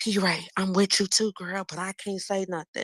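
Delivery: hushed, secretive, confiding stage whisper. Retelling how supporters come up and speak to her: imitating someone half-whispering. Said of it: "they come up to us and they whisper".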